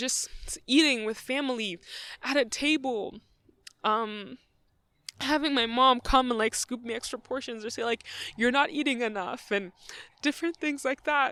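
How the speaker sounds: tearful, voice breaking. Remembering eating with family at a table: crying. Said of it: "I don't even know I'm crying".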